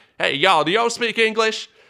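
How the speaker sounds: loud, very high, put-on American Midwestern accent. Retelling how tourists in Spain approach locals: imitating an American Midwestern accent. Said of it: "sorry for the accent there".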